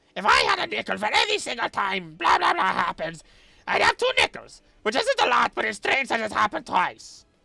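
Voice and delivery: high, creaky put-on cartoon villain voice. Doing the voice they use whenever someone mentions the Platypus, a cartoon villain voice. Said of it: "I immediately want to use the voice".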